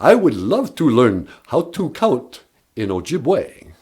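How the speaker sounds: put-on Transylvanian-accented voice. Asked about learning Ojibwe, a Sesame Street character replies in a Transylvanian accent. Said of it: "the Transylvanian accent is".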